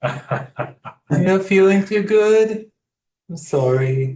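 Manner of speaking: put-on high, loud little kid voice. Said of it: "probably your little kid voice, like, talking to little kids".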